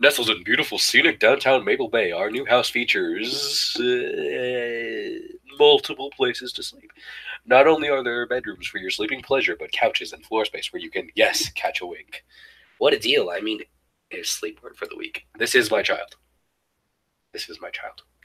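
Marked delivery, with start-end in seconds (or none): 0.0-13.3 corny, cheesy announcer voice with drawn-out "uh". Giving in, the speaker reads aloud doing their best cheesy announcer voice. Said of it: "do my best cheesy announcer voice".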